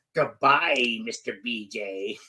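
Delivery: low, sinister, creepy voice. Retelling a goodbye line from a story, in a put-on creepy voice. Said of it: "that was a creepy voice".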